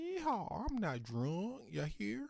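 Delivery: very high, swooping, drawn-out country drawl. Voicing drunk France during a game, in a country accent. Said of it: "giving everybody a country accent".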